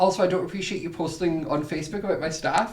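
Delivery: ordinary delivery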